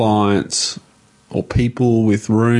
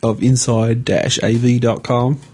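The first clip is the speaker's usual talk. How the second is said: put-on American accent, much higher; 3 semitones higher than usual. Podcast host finishing the episode introduction in an American accent. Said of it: "That sounds American".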